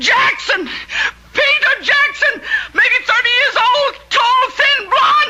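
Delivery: calling out loudly. Threatened in a drama, a speaker shouts out a man's name and description. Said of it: "Don't shout".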